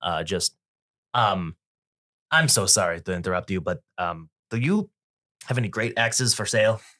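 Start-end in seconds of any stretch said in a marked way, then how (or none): 2.3-6.8 effortful, clumsy, awkwardly polite tone. A man jailed since eighteen interrupts someone, awkwardly polite. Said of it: "as polite as a man who's been in jail".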